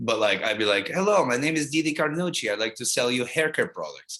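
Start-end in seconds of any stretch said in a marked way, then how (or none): 0.9-4.2 fake Cuban accent, pitched higher. Recalling a comedy character they did who sells haircare products, fake Cuban or Russian accent. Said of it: "I washed in and out of those accents".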